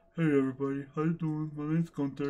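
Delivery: put-on dog character voice. Owner introducing the pet dogs to viewers: Gunther dog voice. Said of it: "My voice for Gunther is".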